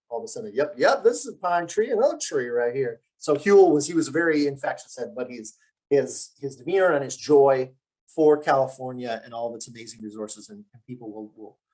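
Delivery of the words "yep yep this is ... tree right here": put-on sing-song American Southern accent. Retelling describing a Monterey pine tree on the Farallons: Southern accent. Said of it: "you've got a Southern accent".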